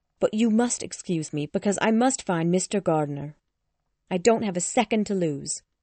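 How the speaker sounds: plain reading voice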